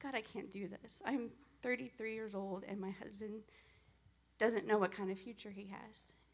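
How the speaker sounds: ordinary talk, nothing marked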